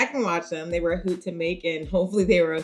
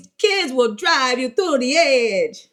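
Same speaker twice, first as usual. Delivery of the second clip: very bad, clumsy put-on Italian accent, loud; 6 semitones higher, 5 dB louder than usual. Talking about kids in parenting, in a very bad Italian accent. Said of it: "That was a very bad Italian accent".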